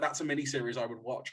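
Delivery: plain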